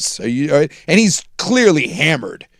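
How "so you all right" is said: mock very polite police officer voice. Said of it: "the most polite, uh, cop of all time".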